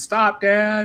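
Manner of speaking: mock very high kid scream. Retelling how the kids react to the joke: imitating kids screaming. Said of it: "start screaming".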